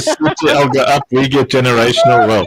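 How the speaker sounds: ordinary delivery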